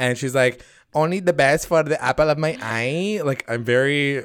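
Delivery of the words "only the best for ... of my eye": put-on Spanish accent. Retelling a woman's words, the speaker quotes her: Sofia Vergara accent. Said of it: "I'm doing this accent".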